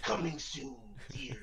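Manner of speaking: booming movie trailer announcer voice.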